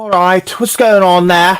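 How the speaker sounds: put-on British accent. Speaker shows how the character Philip should sound: Philip impression with British accent. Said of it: "I did kind of do a good little Philip impression".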